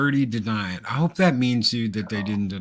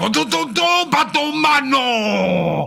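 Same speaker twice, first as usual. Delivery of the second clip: high, raspy voice with batomano drawn out; 6 dB louder than usual. Comparing cartoon dubs, imitating the Japanese-dub Joker: mock Japanese-dub Joker. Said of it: "that son of a bitch is like".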